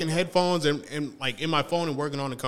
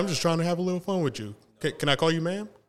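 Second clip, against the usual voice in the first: ordinary talk, nothing marked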